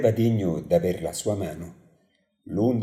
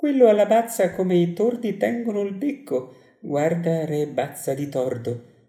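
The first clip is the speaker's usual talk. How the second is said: high, scornful, contemptuous jeer through laughter; 9 semitones higher than usual. She exclaims, mocking a well-liked young king, laughing with contempt. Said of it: "esclamò, ridendo con disprezzo".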